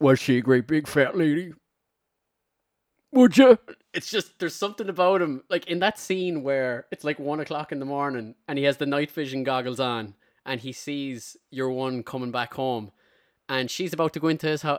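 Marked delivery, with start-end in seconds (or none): 0.0-3.6 very loud, maniacal, creepy, unhinged voice. Doing an impression of the killer Buffalo Bill from Silence of the Lambs: Buffalo Bill voice. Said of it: "I was doing my impersonation".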